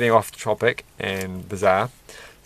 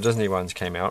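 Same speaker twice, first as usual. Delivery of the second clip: ordinary talk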